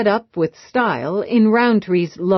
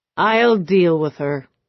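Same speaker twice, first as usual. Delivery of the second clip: calm, even, cool, flat delivery. Roundtree replies to Eve and Rourke at the table, in a cool, flat tone. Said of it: "in a cool, flat tone".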